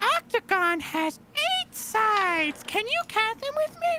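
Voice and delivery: very high-pitched, squeaky puppet voice. Speaker notices their own voice sounds nasal and goes into an Elmo voice. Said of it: "kind of like an Elmo voice".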